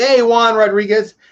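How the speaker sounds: put-on loud, high, angry yell. Retelling how a girl's mother came in and yelled at him, retelling a yell. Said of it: "her mother came in and yelled at me".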